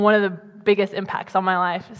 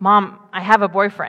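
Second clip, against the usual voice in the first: ordinary talk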